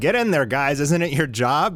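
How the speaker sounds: usual speaking voice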